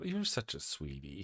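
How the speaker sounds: sweet, doting coo, low, soft and slow.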